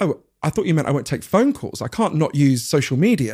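earnest, baffled, sincere tone. Retelling a godson's answer about using his phone: imitating baffled sincerity. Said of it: "he said it with a kind of baffled sincerity".

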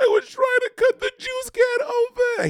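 crying voice, high-pitched and slow.

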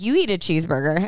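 normal talking voice

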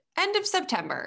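high, mock announcer voice. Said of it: "it was like".

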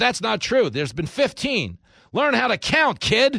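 yelling, scolding put-down tone. Retelling how a candidate yelled at a girl who questioned him, mock-yelling. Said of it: "He's yelling at this girl".

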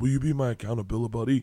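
hushed, quiet half-whisper. Retelling what Nadav half-whispered after the movie, imitating Nadav half-whispering. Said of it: "Nadav whispered to me".

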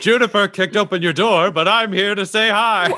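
cheerful, upbeat put-on voice.

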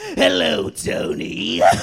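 rough, creaky, growling cartoon-villain voice. After offering his impression, speaker greets Tony: Joker impression. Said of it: "my Joker impression".

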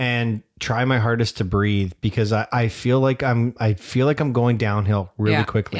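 ordinary delivery

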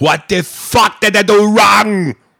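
put-on belted, loud, high, thick Austrian accent. Quoting a favorite movie line again, in that Schwarzenegger voice. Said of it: "in that Schwarzenegger voice".

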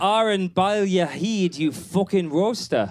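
put-on Scottish accent. Reading out a listener's scottish phrase: scottish accent. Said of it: "For the Scottish accent".

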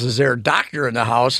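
ordinary talk

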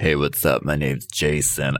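very low, deep, put-on tough-guy voice. Acting out a man introducing himself, imitating Jason's trade voice. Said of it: "he's putting on serious trade voice".

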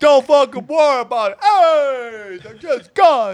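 slow loud drawl. Imitating the door guy who brings it up: Andrew Dice Clay voice. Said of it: "he talked like Andrew Dice Clay".

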